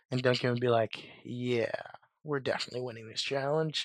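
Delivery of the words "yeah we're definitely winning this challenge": soft, obviously insincere sarcasm, acted out. Retelling a show challenge where a contestant answers a teammate, mock-sarcastic line. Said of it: "Sarcastically, of course".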